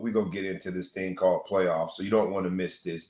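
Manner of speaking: ordinary talk, nothing marked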